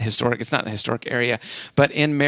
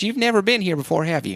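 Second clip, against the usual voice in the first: not-very-good, put-on Southern accent; 6 semitones higher than usual. Quoting a woman giving directions to a big chicken, in a not-very-good Southern accent. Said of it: "I don't have a very good Southern accent".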